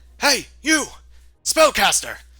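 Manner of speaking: loud shouting voice. Voicing a guard who spots someone casting spells: guard shouting. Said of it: "they shout".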